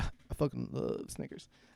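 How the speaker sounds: rich, deep baritone, almost whispered. Repeating their own earlier remark back, in a mock rich baritone. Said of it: "A rich baritone out of nowhere".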